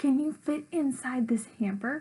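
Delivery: ordinary delivery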